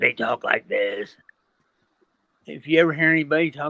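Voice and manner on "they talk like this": low, hushed, quiet frog voice. Describing how possessed people talk, the speaker demonstrates: Froggy frog voice. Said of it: "talk in like a toad or a frog voice".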